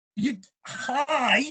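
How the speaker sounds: high, starstruck, stammering voice. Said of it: "And I'm like".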